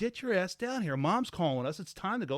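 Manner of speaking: angry loud yell. Retelling yelling at a daughter who ran upstairs: imitating own angry outburst. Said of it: "I'm blowing up because I'm already pissed off".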